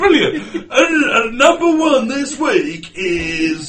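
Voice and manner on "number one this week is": put-on drunk presenter voice, much higher and louder. Friends announce an invented band name chart-style; mock-drunk Top of the Pops presenter. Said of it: "You sounded drunk".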